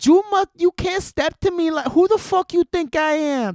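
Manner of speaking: Dominican accent, pitched way up. Trying for a Puerto Rican voice, the speaker lands on a Dominican-sounding accent. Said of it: "That's like a Dominican".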